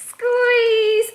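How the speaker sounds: very high, loud, full-voiced shout. Leading children in squeezing a sponge together: shouting the word squeeze. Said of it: "we're gonna shout".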